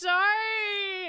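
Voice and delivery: high, teary catch in the voice.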